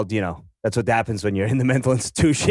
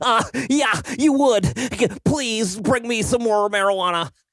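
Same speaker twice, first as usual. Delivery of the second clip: very high, irate, annoyed voice; 9 semitones higher than usual.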